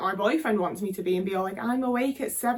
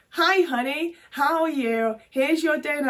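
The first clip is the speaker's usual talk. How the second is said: slow, sugary, fake-sweet put-on voice; 4 semitones higher, 3 dB louder than usual. Acting out greeting a partner who comes home, pretending to be pleasant while handing over dinner, in a put-on sweet voice. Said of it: "putting on the persona".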